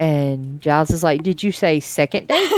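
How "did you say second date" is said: ordinary delivery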